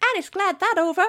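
helium-high put-on voice. Describing a clip where he swings into a tree trunk, quoting him in a castrato voice. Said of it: "says in a kind of castrato voice or helium".

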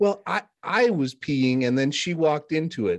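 put-on slow little-kid voice.

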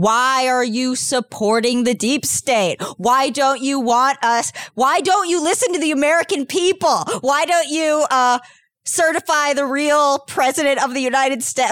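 high-pitched, haranguing screaming yell. Live streaming at a police officer in character: screaming in character. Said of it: "I start screaming".

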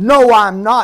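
mock firm, insistent, adamant tone, very loud. Retelling asking a girl if she is bossy, imitating Lily's adamant no. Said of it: "she was very adamant about it".

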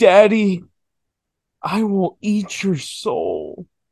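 put-on very drawn-out, slow, high possessed-girl voice. Retelling a possessed girl's line during an exorcism: imitating a possessed girl. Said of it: "she's like".

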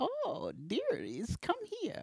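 put-on very high, soft, sing-song cackling old woman voice. Narrating a scene, voicing an old woman as the listeners approach: cackling old woman voice. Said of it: "kind of knitting and cackling to herself".

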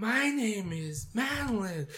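awkwardly affected, very high, slow, airy voice.

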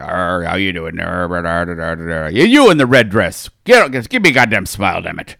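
animated put-on pirate character voice. Describing an animated pirate on a screen reacting to passersby, pirate voice. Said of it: "an animated pirate on there. And he'd be like".

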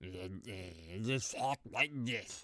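low, slow, marble-mouthed mumble. Show your co-host how the actor talked the whole time, in a Jeff Bridges voice, marbles in mouth. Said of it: "He sounded like he had marbles in his mouth".

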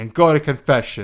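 ordinary delivery

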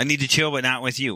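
ordinary talk

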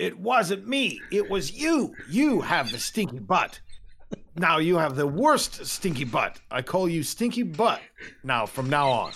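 high goblin voice. Narrating a goblin scene, the speaker voices the other goblin in a different goblin voice. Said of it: "You hear the different goblin voice now".

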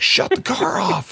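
very high, rasping, stretched-out screaming. Retelling how a cop pulled up behind him and screamed at him, retelling a cop's screaming. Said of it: "he's screaming at me".

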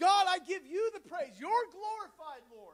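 loud, full-voiced cry. Retelling how the healed leper turned back to praise God: retelling a loud cry of praise. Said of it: "With a loud voice".

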